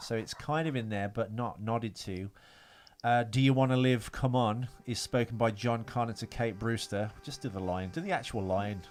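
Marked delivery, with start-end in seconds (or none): none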